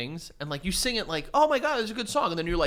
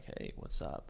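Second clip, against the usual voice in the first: hushed, whispered, low, breathy, seductive put-on sexy voice; 15 dB quieter than usual. Showing what a sexy nighttime voice sounds like, put-on deep sexy voice. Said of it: "So my voice is just like".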